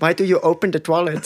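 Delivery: put-on Indian accent in English. Retelling what a man on the toilet asked him, in an indian accent. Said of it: "mit so indischem Akzent auf Englisch".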